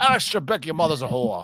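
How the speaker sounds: put-on Scottish accent, done for show. After an Irish line, speaker shows off a better Scottish accent. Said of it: "I do a better Scottish one".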